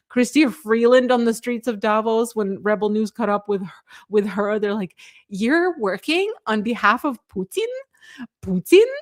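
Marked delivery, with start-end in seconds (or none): 5.2-8.8 swooping put-on Ukrainian accent. Retell how Chrystia Freeland answered Rebel News in Davos, imitating her in a Ukrainian accent. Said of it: "she says in her Ukrainian accent".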